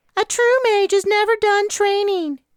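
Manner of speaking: very high, put-on falsetto voice. Reading a character who mocks her mom with a puppet hand: falsetto. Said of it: "She struck a falsetto".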